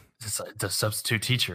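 hushed, soft whisper. Retelling what a friend whispered during a celebrity game: retelling a whisper. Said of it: "he whispers in my ear".

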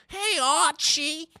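very high pitch with a peculiar, odd cadence. Showing everyone the voice being discussed, in a Betty Boop-like voice. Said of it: "just so everyone's clear what we're talking about".

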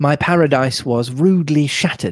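ordinary delivery

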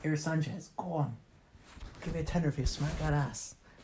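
hushed, urging, encouraging whisper. Retelling what someone said to dare them: imitating someone whispering. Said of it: "he was whispering at me".

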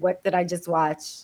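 ordinary delivery

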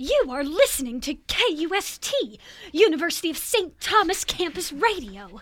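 put-on old-film style enunciated voice. Campus radio host gives the station ID in old-film style enunciation. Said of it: "you talk like this".

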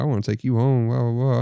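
plain

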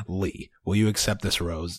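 flat deadpan with zero interest. Retelling how a woman offered a man a rose, imitating a deadpan delivery.

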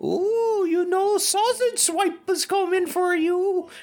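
put-on Icelandic-accented voice. Imitating parents scaring a child at night: put-on Icelandic accent. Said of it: "That sounded very Icelandic".

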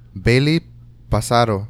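mock Spanish pronunciation. Trying out how to pronounce a name, in a spanish accent. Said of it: "should I say it in a Spanish accent?".

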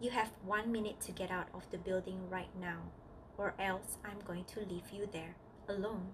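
ordinary talk

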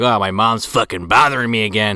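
ordinary delivery

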